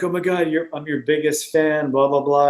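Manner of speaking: plain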